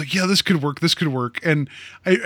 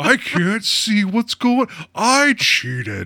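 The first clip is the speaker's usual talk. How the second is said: high, swooping cartoon dog voice; 5 semitones higher than usual. Describing how a performance sounded, doing a Goofy Goggles impersonation. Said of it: "that's my Goofy Goggles impersonation".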